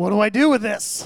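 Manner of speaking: loud, high alarmed cry. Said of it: "there was a moment there where I was like".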